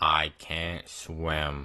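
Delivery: low, dead-level deadpan monotone. Retelling what a straight-faced dude said while he fought for his life; Ben's flat monotone. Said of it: "in the most monotone voice".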